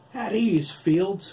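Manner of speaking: shrill, loud, high-pitched blaring growl. Narrator voicing Corny answering Adam, growled. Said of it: "Corny growled".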